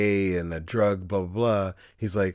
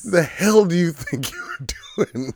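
laughing while talking, higher and louder; 10 semitones higher, 4 dB louder than usual. Repeating the cop's line while cracking up: laughing while talking. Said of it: "I'm losing it right now".

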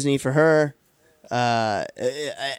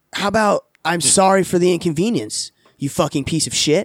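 play-acted, furious, angry retort tone; 3 semitones higher than usual. Retelling a comeback to a man who corrected how long they'd waited, mock-angry. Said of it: "I was so mad".

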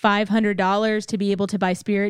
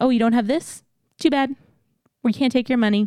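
acted, mock-dismissive tone; 3 semitones higher than usual. Arguing that race entry needs rules, the speaker acts out organizers, imitating dismissive race staff. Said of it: "it needs to be that kind of a".

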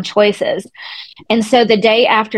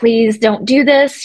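re-enacted begging cry, slower. Recalling begging her not to go, retelling a begging plea. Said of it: "I begged her not to go, really just kind of cried out to her".

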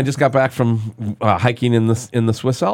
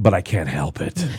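sinister-sounding creepy voice; 6 semitones lower, 4 dB quieter than usual. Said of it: "sounded creepy, dude".

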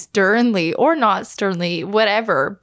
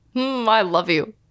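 acted insincere, mocking tone. Imitating a partner's bedtime I love you, sounding insincere. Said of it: "That didn't sound sincere".

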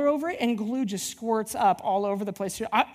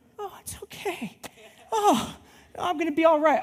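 acted, pitched-up voice, holding back tears; 6 semitones higher than usual. Retelling reacting to a flooded kitchen: retelling trying to hold back tears. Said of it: "I'm like trying to hold it together".

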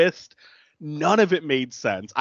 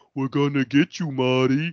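menacing, goading, mocking, jeering taunt; 3 semitones lower than usual. Retelling a movie scene where victims pop up: imitating taunting. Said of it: "taunting him".

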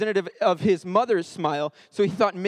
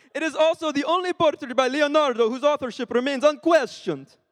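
high-pitched attempted Italian accent. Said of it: "reading this in a Italian accent".

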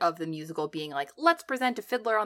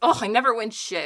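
put-on grumpy voice, higher, louder; 3 semitones higher, 6 dB louder than usual. Quoting a favorite stage line of Vanessa: imitating grumpy Vanessa. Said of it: "she's so freaking grumpy".

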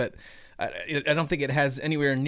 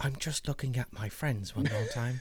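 soft, put-on Australian English accent; 6 dB quieter than usual. Describing reprogramming a droid, the speaker voices C-3PO in an Australian-English accent. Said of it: "That accent was way better than the Lost Hobbit".

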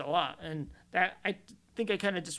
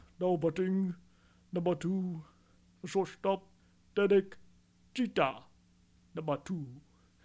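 stadium public address announcer calling-out voice. Showing an example of the longtime Yankees announcer: Bob Shepard impression. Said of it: "that's my Bob, Bob Shepard impersonation".

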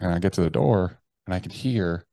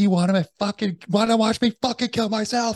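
shrieking, frantic, out-of-control scream, very high; 3 dB louder than usual. Recounting a moment with a gun to own head, re-enacting own screaming. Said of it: "Like I'm fucking screaming".

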